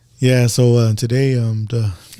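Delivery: calm, hesitant, flat and slow deadpan monotone. Imitating how a comedian talks after grabbing the mic: calm monotone. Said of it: "he talks like this".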